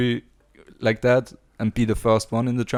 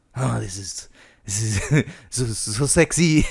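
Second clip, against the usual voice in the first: low, soft, purring fake French accent. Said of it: "I don't know why I'm doing the French accent".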